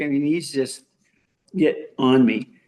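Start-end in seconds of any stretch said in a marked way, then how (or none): none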